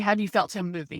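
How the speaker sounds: ordinary talk, nothing marked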